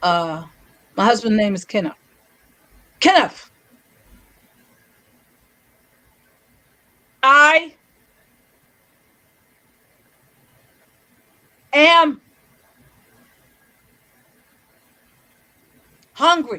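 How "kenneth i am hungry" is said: slow, drawn-out, slightly high speech. Retelling telling her husband kenneth she was hungry, retelling her slowed speech. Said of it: "it's still the slowed speech".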